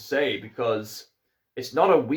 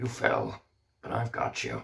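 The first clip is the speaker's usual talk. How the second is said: soft, breathy Irish accent; 3 semitones lower, 8 dB quieter than usual. Quoting the horse from an animated adaptation, in an Irish accent like Liam Neeson. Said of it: "Almost sound a bit like Liam Neeson there".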